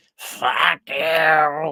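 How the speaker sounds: squawky, high cartoon parrot voice, "you" drawn out. Describing a video, the speaker repeats its words in a cartoon parrot voice. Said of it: "doesn't that sound like a cartoon parrot?".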